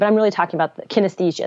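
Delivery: really fast, rushed, rattled-off speech.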